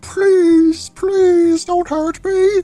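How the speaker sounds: put-on high-pitched voice. Pleading not to be hurt, put-on high-pitched voice. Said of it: "I can do the high pitched voice".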